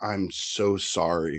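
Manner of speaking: mock bawling, sobbing voice. Retelling what a crying patient said while apologizing: imitating someone bawling. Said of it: "bawling his face out, and he's like".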